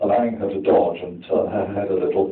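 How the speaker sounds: ordinary delivery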